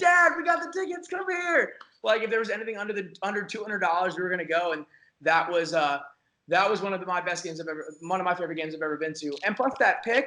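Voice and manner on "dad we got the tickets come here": put-on excited scream, much higher. Recounting finally getting game tickets and calling Dad over, retelling an excited scream. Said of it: "And I'm screaming like".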